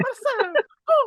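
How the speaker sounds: husky high put-on voice.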